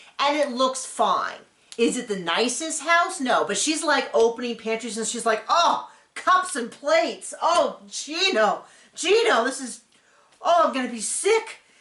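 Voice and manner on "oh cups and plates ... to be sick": acted-out slow, sneering, disgusted, contemptuous drawl. Retelling how she inspects the house with contempt: imitating her disgusted contempt. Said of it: "she walks in his house with that level of contempt".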